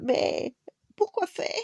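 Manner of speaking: high, quavering, trembling, frightened voice. Narrating a character who backs away from a threatening fox and asks, trembling voice. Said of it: "D'une voix tremblante".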